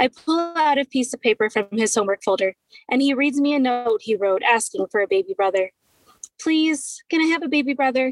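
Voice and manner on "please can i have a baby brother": high, pleading, begging voice. A six-year-old son asks his parent after reading his note, begging. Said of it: "He begs".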